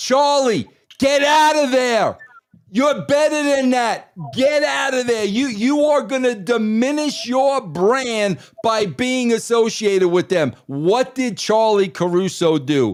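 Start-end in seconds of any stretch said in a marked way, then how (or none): 0.0-10.5 put-on shouting. Telling the other speaker about watching her on TV, retelling screaming at the TV. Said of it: "I was screaming at my T V".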